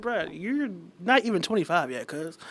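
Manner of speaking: ordinary talk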